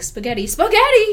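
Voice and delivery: high, loud, belted word, repeated.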